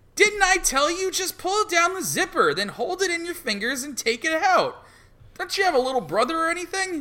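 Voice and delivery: very high-pitched put-on female voice. Reading a comic aloud with another speaker, voicing the girlfriend. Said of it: "Do, do the lady".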